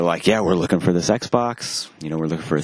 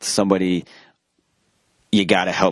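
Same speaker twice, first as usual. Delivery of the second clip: usual speaking voice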